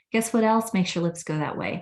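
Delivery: ordinary talk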